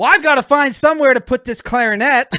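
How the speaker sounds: very loud, high-pitched hollering shout. Retelling a man's reply to a woman, imitating Dale shouting. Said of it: "the volume in which Dale is shouting".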